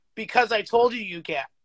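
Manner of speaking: plain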